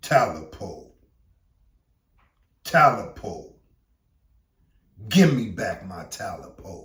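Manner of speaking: deep, very low, haunting and creepy voice. Narrating a story, the thing on top of the fellow speaks into his face, real low voice. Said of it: "in a real low voice".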